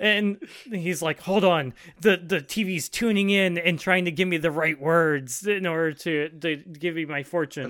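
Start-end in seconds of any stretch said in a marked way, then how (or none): none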